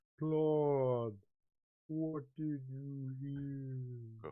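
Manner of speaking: very slow slow-motion speech, dragged out. Describing what a character hears from another: slow motion talk. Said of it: "almost kinda slow motion talk".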